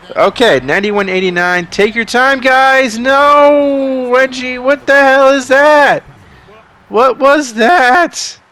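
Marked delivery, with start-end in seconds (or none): 1.7-8.4 very high, very slow, raised voice that cracks. Calling a basketball game, reacting to a missed free throw: voice cracking. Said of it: "My voice is cracking".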